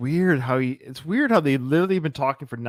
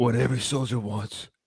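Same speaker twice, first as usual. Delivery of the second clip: put-on whispering soldier voice; 3 dB quieter than usual. Recalling the end of Rambo Part Two: whispered Rambo impression. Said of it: "when he goes".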